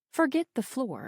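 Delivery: plain reading voice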